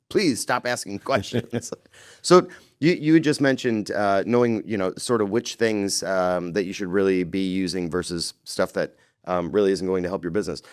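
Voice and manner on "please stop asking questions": acted-out scream, much higher. Recounting a website that keeps asking questions, retelling screaming at the screen. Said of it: "literally screaming at the screen going".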